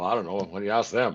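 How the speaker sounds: put-on dry, expressionless, low deadpan. Retelling a coach's answer to a reporter: imitating Daryl Sutter deadpan. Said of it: "and deadpan".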